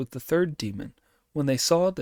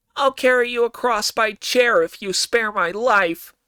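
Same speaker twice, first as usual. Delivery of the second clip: very nasal, high-pitched and loud, as if nose pinched; 9 semitones higher, 7 dB louder than usual. Reading a story, Monkey pinches his nostrils and speaks to Lord Tang: very nasal Monkey voice. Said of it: "promised to do so in a very nasal voice".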